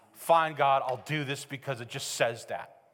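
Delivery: low, reluctant, grumbled mock resignation. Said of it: "fake sense of submission".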